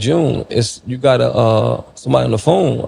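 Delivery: ordinary delivery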